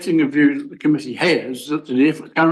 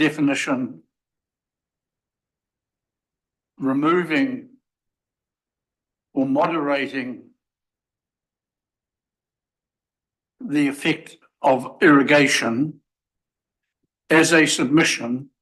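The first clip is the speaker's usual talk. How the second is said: drawn out, slow, deliberate, word by word. Moving a motion to the subcommittee while making it up: speaking slowly. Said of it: "I'll say it slowly".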